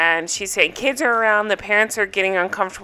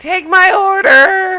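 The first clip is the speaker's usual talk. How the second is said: put-on very high drunken yelling; 11 semitones higher, 6 dB louder than usual. Recapping a dinner scene where Rachel is drunk: Rachel impression, yelling. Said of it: "I believe she's yelling".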